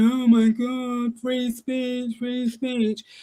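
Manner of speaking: sobbing, tearful, slow, weepy, whining voice. Mocking a sender of messages who would complain when arrested: mock crying. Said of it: "crying, going".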